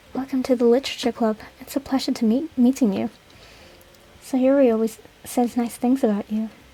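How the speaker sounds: quietly cool, soft voice. Trying out a voice for a new character in the story, soft voice. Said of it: "I'm gonna try and do soft".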